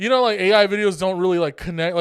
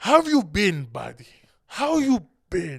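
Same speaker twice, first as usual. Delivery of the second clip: put-on Middle Eastern accent. Retelling what a customer said when he walked in: imitating a customer's accent. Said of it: "But he talks like".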